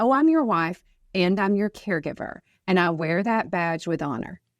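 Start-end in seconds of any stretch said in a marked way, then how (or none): none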